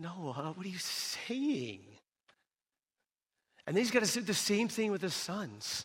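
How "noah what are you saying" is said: high, slow, disbelieving tone. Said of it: "And she's like".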